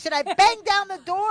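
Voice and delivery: loud, high, furious yell.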